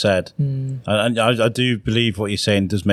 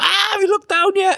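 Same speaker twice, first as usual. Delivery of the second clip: play-acted, very high, panicked pilot announcer voice. Retelling a comedian's joke about a plane captain over the speaker: imitating a panicking captain.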